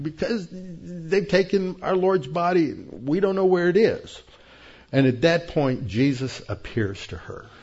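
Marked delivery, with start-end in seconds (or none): 0.0-4.2 mock weeping, high-pitched, words through tears. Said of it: "you can just hear her crying".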